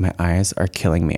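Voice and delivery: put-on whisper. Retelling what someone whispered during the ceremony: retelling a whisper. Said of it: "whispered over to me".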